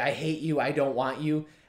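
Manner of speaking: plain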